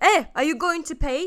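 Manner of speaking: shouting. Retelling how the driver shouted after the speaker got out of the car, imitating a driver shouting. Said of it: "he shouts at me like".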